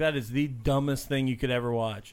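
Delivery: normal talking voice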